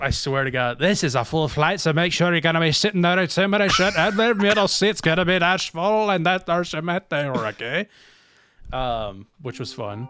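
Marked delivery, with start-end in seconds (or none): 0.0-7.9 heavy Irish brogue laid on thick, pitched up. Retelling a gate agent announcing a full flight, in a thick Irish accent. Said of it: "He had an a really thick Irish accent".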